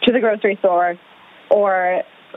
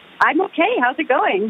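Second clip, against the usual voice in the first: cheerful, upbeat, higher pitch; 6 semitones higher than usual. A guest in Italy answering the host's greeting, cheerful. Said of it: "You sound very cheerful".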